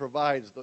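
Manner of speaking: ordinary talk, nothing marked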